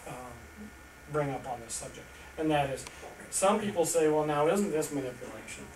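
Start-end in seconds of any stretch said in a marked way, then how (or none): none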